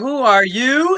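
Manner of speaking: high cartoon character voice. Quoting a question from a company's message, in a Lion King voice. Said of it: "in my Lion King voice".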